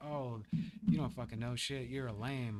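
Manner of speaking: normal talking voice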